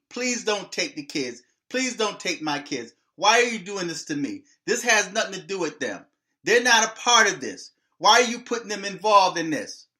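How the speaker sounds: desperate, pleading, begging delivery. Retelling a movie scene where a father pleads not to lose the kids: imitating someone begging and pleading. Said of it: "He was begging and pleading".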